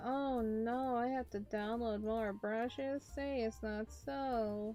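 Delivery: sarcastic, fake mock dismay. Facing having to download more brushes, sarcastic mock dismay. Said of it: "I say that sarcastically".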